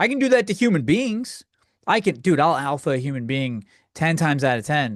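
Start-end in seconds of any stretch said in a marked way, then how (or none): none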